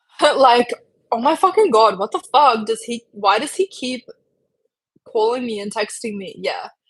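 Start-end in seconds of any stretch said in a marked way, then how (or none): 1.1-6.3 acted-out, super annoyed, fed-up exasperated outburst. Complaining about someone who keeps calling and texting: super annoyed. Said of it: "you sound super annoyed".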